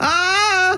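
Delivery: high, loud screaming voice.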